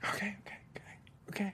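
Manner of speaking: high, soft, teary whisper.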